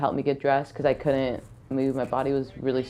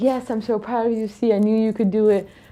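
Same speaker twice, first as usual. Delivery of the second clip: put-on screaming, much higher; 8 semitones higher, 5 dB louder than usual. Retelling her dad's reaction to her making the national team, imitating his weird screaming. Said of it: "he starts doing this weird screaming thing".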